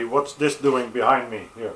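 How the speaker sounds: ordinary talk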